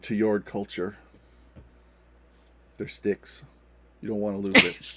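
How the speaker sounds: hushed whisper. A character addresses a companion during a scene, whispering. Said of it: "Lyle whispers".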